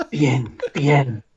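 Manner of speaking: put-on Spanish-accented voice. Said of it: "in your Antonio Banderas".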